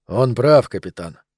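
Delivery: ordinary delivery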